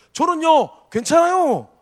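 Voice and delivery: Chungcheong dialect. Suggesting an answer to a question about smiling, in a Chungcheong dialect accent. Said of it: "그 충청도 사투리 좀 해봤는데".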